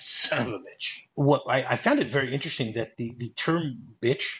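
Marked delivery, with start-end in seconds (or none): 0.0-1.0 quieter, acted-out mutter under the breath. Speaker recounts John cursing after the scene, acting out a mutter under breath. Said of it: "mutters under his breath".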